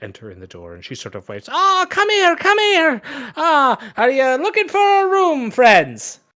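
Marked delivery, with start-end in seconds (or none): 1.5-6.2 eager, very high, shrill, loud excited voice. Game master voicing the innkeeper greeting the party at the door, excited greeting. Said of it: "who excitedly greets you".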